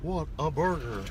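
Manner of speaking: slow put-on cartoon voice. Recalling a Whataburger commercial, doing a Hank Hill voice. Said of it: "sounds like Hank Hill".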